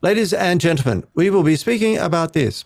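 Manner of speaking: stiff, nervous formal voice. Describing a man who lost his charm to performance anxiety, imitating stiff formal delivery. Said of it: "his body stiffened and he had performance anxiety".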